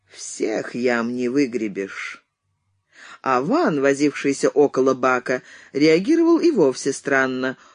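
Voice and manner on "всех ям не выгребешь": hollow, dull, low and muffled delivery. Donald, after only a cough, answers a companion's remark, said dully, muffled. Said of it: "глухо сказал".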